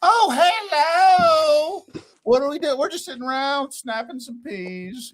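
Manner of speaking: put-on very high, thick, full Southern accent. Imitating a partner on the phone with Southerners: mock Southern drawl. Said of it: "my full accent comes back".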